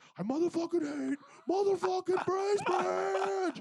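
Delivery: put-on screaming voice. Retelling losing it in a parking lot, speaker re-enacts screaming at the sky. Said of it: "I'm screaming at the sky".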